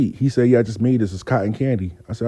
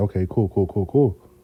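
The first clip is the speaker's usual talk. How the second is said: hushed, quiet, creepy psycho-killer voice; 4 semitones lower, 4 dB quieter than usual. Retelling how a friend answered the phone: imitating friend's quiet psychopath voice. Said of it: "he talks real quiet like he a psychopath".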